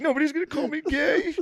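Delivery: very high, frantic, blubbering crying tantrum. Retelling the president's reaction to being called weak, imitating a spaz crying rant. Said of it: "he spaz cries".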